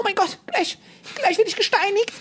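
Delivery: very high panicked shriek, German woman's voice.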